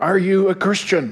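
put-on broken English. Retelling a woman on a plane asking a question: imitating broken English. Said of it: "says in broken English".

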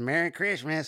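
high, loud, snide tone. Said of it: "all snide like that".

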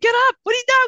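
mock yelling. Describing what they'd shout at the tv, the speaker acts out yelling at the tv. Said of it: "something I would be yelling at the TV about".

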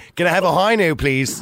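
mock posh Dublin accent. Showing how a D4 speaker would order, put-on Dublin 4 accent. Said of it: "if I was D4, I'd be saying".

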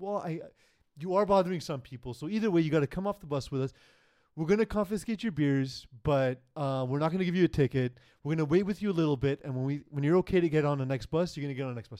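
very gentle, patient, coaxing voice. Retelling police officers asking a man to leave the bus: imitating cops speaking very gently. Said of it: "as gently as they possibly could".

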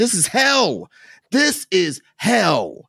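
very high, agitated, swooping, drawn-out, riled-up outburst. Ranting to another speaker about ai replacing artists: riled up. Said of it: "I'm sorry that I'm so riled up".

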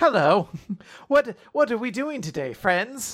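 much friendlier mascot voice. Imitating the cute mascot character greeting friends: friendlier Medusa voice. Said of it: "It immediately adopts a much friendlier voice".

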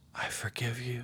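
gentle, soft, hushed whisper. Guiding listeners through a scene, the speaker voices the Savior, gentle whisper. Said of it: "in a gentle whisper".

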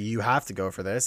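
ordinary talk

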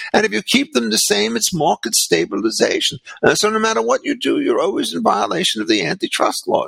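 English-sounding British accent.

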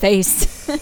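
ordinary delivery, nothing marked

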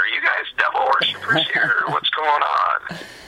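put-on high, classic old granny voice. Retelling what a grandma said, in a quintessential grandma voice. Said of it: "quintessential grandma, just in that exact voice".

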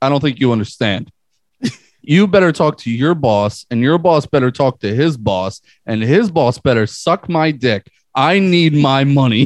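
put-on New York accent. Retelling a line-cutter demanding a refund, imitating a New York accent. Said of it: "his accent".

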